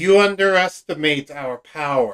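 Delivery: sarcastic, cutting, snarky, snide tone. Narrating a game scene and voicing a character's reply: snarky tone. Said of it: "Silvestro says in a snarky tone".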